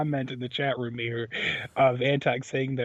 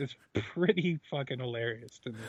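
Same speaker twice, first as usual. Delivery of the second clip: plain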